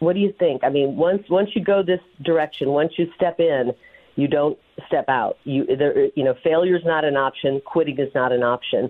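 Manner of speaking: usual speaking voice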